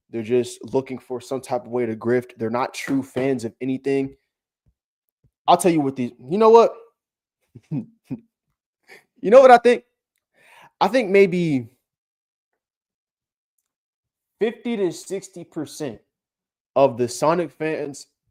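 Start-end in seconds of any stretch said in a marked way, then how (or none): 10.8-18.0 slow, teary voice on the verge of tears. Ranting about Sonic fans, sounding about to cry. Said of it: "Why did I sound like I was about to cry there?".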